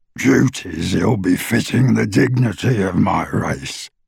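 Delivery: harsh non-human goblin voice. Narrator voicing a goblin's reply to Ted, rougher, less human voice. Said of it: "his voice rougher and less human as he said it".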